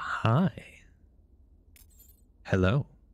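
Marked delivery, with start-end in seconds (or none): 0.0-0.8 odd, high-pitched whisper. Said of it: "I don't know why I said it like that".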